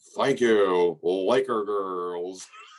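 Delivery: deep, very slow, drawn-out announcer voice. Giving a cousin a shout out: Lawrence Tanner announcer voice. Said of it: "I also sound like Lawrence Tanner, Lakers public announcer".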